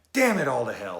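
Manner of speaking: put-on high, loud outburst.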